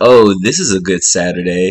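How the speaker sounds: slow, drawling, sarcastic delivery. Quoting a remark the speaker can't stand hearing; mock-sarcastic. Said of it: "she was like being sarcastic".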